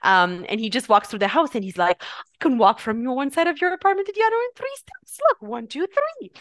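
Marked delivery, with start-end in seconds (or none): 2.0-6.3 very high, swooping put-on British accent. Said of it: "because he has the British accent".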